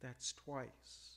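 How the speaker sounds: low, soft, very quiet. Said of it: "I heard my wife very quietly say".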